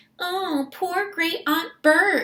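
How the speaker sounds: patronizing, condescending, very high-pitched, slow sympathy. A narrator reads the officer's remark beside the casket, condescending. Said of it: "he said in a condescending voice".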